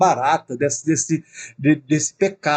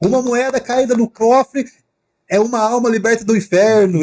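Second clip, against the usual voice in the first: acted-out high, shouted hawker's yell; 7 semitones higher, 4 dB louder than usual. Retelling how Johann Tetzel sold indulgences: imitating Johann Tetzel shouting. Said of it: "Ele fica gritando assim".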